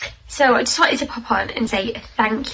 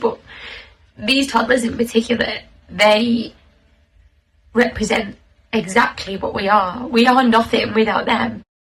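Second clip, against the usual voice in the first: choked, tearful, voice breaking, crying through the words; 3 dB louder than usual. Speaker talking to listeners about their toddlers: crying, voice breaking. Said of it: "I just can't stop crying".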